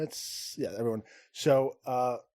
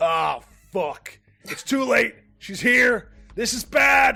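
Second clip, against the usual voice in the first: full-throated, very loud, high, alarmed shout; 9 semitones higher, 9 dB louder than usual. Game narrator voices Big Lock as a dark wind blows through the vault: Big Lock shouting. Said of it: "and Big Lock shouts".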